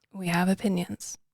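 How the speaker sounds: sounding really sad. Agreeing with the other host during the podcast intro, sounding really sad. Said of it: "you sound really sad".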